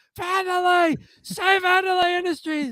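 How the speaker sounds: very high yell from another room. Retelling a sitcom scene, George calling from the bathroom: imitating George shouting. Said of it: "you could hear George shouting from the bathroom".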